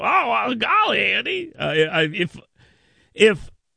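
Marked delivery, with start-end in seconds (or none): 0.0-1.5 very high, slow, creaky, rough voice. Doing a quick Barney Fife bit: Barney Fife voice. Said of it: "I don't know why I sound like Barney Fife".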